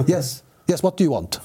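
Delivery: put-on English with Swedish accent showing through. Retelling own answer to a phone call: imitating own Swenglish.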